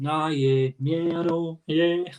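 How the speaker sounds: sluggish, low-energy, low-pitched and slow voice. Showing how they pick up a listener's energy: imitating low energy. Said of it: "I'm gonna get your energy and start being".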